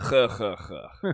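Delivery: put-on cheerful ha-ha-ha chuckle in a Russian accent. Reading a maid's line after being asked: Russian chuckle. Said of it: "Do your best Russian chuckle".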